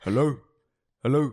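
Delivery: put-on South African Afrikaans-accented speech. Retelling answering a man's hello, with a bit of Afrikaans accent. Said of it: "I like put a bit of Afrikaans in my voice".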